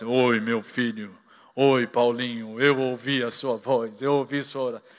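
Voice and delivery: deep, divine, god-like voice from the sky above. Joking about hoping god answers a prayer aloud: imitating a booming voice of god. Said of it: "Deus começasse a falar com aquela voz".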